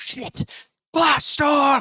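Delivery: shrill, very high, alarmed yell. Narrating a desert caravan scene as the caravan leader, shouting. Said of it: "the caravan leader shouts".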